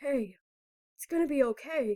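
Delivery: spoken in a low voice. A narrator reads Tony's reassurance to the narrator character; low tone. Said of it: "Tony says in a low tone".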